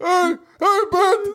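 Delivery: put-on very high, slow, silly cartoon grandpa voice.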